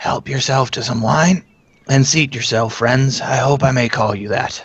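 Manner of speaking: parched, dry, rasping voice. Narrator voicing a figure who welcomes the friends, dry raspy voice. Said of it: "Even the person's dry, raspy voice".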